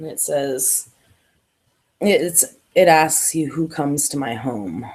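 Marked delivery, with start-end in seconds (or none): 3.5-4.9 hoarse, low, quiet, raspy hushed voice. Narrating a scene, voicing a voice heard from the darkness, raspy, quiet voice. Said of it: "It's kind of a raspy, quieter voice".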